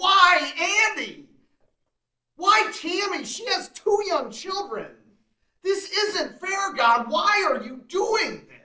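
put-on furious outcry, very high. Retelling pulling the car over in shock and yelling at God; retelling a yell. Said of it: "I yelled".

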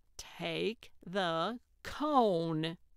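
slow, talking down, "cone" drawn out. Narrator reads a woman's instruction to an exasperated man, slowly as if to a stupid child. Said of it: "slowly, as if speaking to a stupid child".

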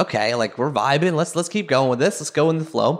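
ordinary talk, nothing marked

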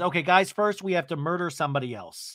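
ordinary talk

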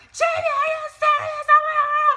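full-blast, very high, loud, shrill screaming. Recounting the mother's phone call, imitating mom screaming at the speaker. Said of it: "just screaming, yelling at me".

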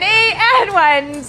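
high-pitched, slow, stretched-out delivery. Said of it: "And now you're gonna do it with them".

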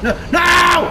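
shouting in frustration.

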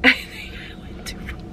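unvoiced, hushed whisper with a laugh.

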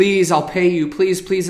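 acted-out pleading, begging tone. Retelling a story of a debtor pleading with a king: acting out pleading. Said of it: "the man was pleading".

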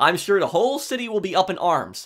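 ordinary delivery

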